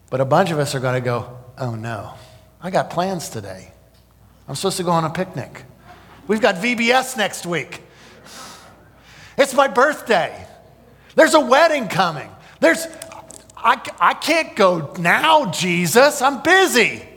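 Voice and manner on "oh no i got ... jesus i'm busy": joking put-on panic with swooping pitch. Acting out people excusing themselves from Christ's return: facetious mock panic. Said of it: "I'm being facetious".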